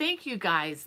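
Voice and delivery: voice close to crying. Thanking the live chat viewers while holding back tears. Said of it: "if I can say this without crying".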